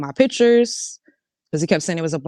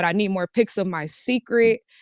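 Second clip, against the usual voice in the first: ordinary talk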